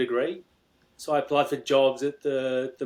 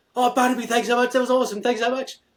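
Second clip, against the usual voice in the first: acted, very high, loud, thrilled kid-like gush; 10 semitones higher, 5 dB louder than usual. Retelling a year twelve student thanking him after a talk: imitating an excited kid. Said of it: "he was all excited".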